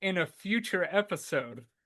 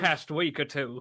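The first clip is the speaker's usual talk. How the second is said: put-on Southern cowboy voice, pitched lower; 3 semitones lower than usual. Offering to do the Southern cowboy, speaking in a Foghorn Leghorn Southern cowboy voice. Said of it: "I'll do the Southern Cowboy".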